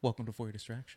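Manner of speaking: slightly sultry voice. Host opening the podcast episode, in a sultry voice. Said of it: "A little sultriness".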